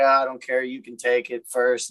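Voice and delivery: ordinary talk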